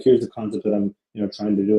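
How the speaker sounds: plain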